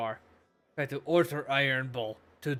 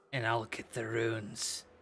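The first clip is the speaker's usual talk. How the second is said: put-on gruff, tough-sounding voice; 2 semitones lower, 4 dB quieter than usual. Retelling someone's reply word for word, in a put-on gruff voice. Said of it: "trying to sound all gruff".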